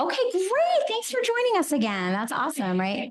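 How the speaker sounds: snide, dripping sarcasm in a high sing-song. Welcoming a group back before a meeting: sarcastic. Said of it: "I sound like a sarcastic jerk".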